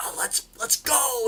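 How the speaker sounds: whispered, breathy, drawn-out excited cheer. Retelling celebrating a touchdown while watching a game: imitating own screaming. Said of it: "I'll start screaming".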